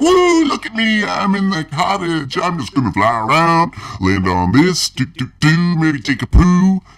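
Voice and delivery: zany crazy bird voice, pitched very high. Retelling a crazy bird that flew into the cottage: imitating a crazy bird. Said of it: "He's all like".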